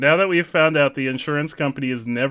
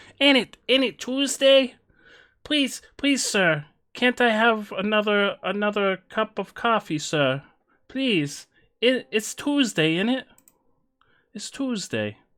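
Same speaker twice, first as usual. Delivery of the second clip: pitched-up attempted British accent; 8 semitones higher than usual. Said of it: "That's not British".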